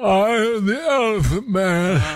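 voice pushed way up high. Doing an impression before taking a big bite: Elephant Man impression. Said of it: "I gotta do my impression".

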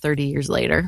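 ordinary delivery

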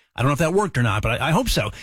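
ordinary delivery

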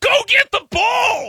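very high, shrill, stretched-out acted holler. A coach retells yelling at a thirsty kid during a soccer game, retelling a yell. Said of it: "I'm yelling at him".

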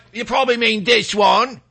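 put-on Cockney British accent. Speaker, complimented on a british voice, demonstrates it in a cockney accent. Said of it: "that's the Cockney one".

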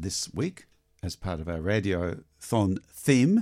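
slow, careful, drawn-out delivery. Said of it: "I have to say that very slowly".

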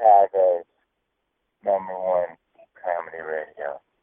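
mock sultry, seductive voice, low and slow. Announcing the station name as a joke: porn voice. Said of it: "I said that in my porn voice".

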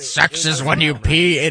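put-on rough, gruff old gnome voice, commanding whisper. Retelling a dream in which a gnome whispers in their ear, gruff old gnome voice. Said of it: "It was a gruff voice".

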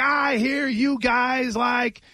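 high, slow, shouted taunting delivery, villain-like.

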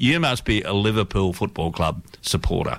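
ordinary delivery

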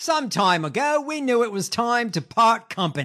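bad put-on Australian accent. Reading out a statement on pulling the plug on a deal: shitty australian accent. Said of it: "In my shitty Australian accent".

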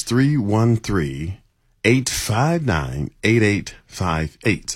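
slow, careful, deliberate reading of each digit. Giving a phone number after being asked for it real slow: saying it real slow. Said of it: "real slow".

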